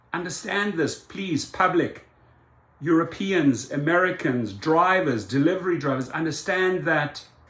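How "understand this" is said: ordinary delivery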